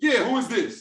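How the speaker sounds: casual, relaxed, slangy street-style voice.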